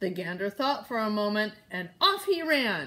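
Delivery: ordinary delivery, nothing marked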